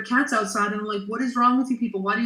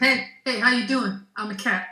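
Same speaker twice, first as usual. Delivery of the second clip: put-on raccoon voice with New York accent; 2 semitones higher than usual. Describing a raccoon at the outdoor cat food, voicing it with a New York accent. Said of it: "your raccoons have New York accents".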